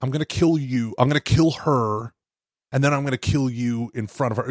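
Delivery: intense, dead-serious, threatening villain voice. Quoting the villain from a movie: imitating Philip Seymour Hoffman's intense villain threat. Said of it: "the most dramatic, intense".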